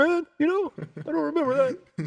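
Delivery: very high, goofy voice swooping and swinging around. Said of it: "your [name] impression?".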